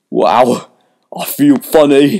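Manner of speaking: very slow, drawn-out, dazed moan. Milton, after great pain and then a soothing feeling, speaks: dazed moan. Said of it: "moaned a dazed Milton".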